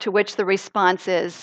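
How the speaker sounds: usual speaking voice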